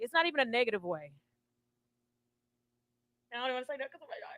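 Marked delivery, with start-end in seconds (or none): 3.3-4.4 soft, choked-up voice cracking with tears. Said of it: "voice be cracking".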